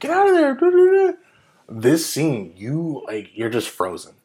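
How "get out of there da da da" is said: loud, high-pitched yell. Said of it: "you get the urge to yell at people".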